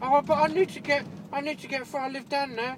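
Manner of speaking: high, whiny, pleading voice.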